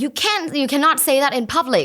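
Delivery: put-on, loud, scolding yell. Retelling a mom scolding her child in a restaurant: imitating a mom yelling. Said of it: "basically yelling at her".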